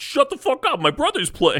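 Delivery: very high, sing-song, swooping hollering. Acting out the other speaker telling a crowd to shut up: imitating someone yelling. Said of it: "You're, like, yelling".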